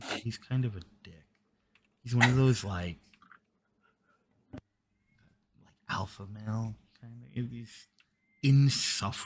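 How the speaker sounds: conspiratorial, confiding stage whisper. Voicing a woman who leans in to talk about another officer, very quiet. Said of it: "leans in a little more and gets very quiet".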